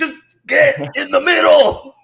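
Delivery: acted-out shout, yelling. Acting out a defender's call to a confused linebacker: imitating yelling at a player. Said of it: "I'm just yelling at him".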